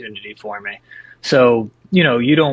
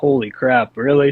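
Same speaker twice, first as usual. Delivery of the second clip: usual speaking voice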